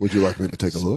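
professional, clinical, doctor-like tone. Retelling what someone said to a woman: imitating a medical tone. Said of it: "give her a very, uh, medical tone".

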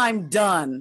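put-on screaming child voice. Describing a kid calling to be wiped: imitating a child screaming. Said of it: "Just scream".

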